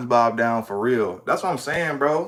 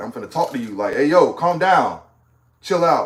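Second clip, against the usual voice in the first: put-on stern male voice. Retelling how the dad talks to someone: imitating a stern man. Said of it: "stern and talk to a motherfucker like".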